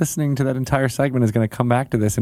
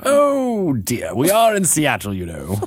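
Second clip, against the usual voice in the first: put-on bookish, studious voice. Introducing the guests in a sweater vest: sounding like Kelsey Grammer. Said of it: "You sound like Kelsey Grammer".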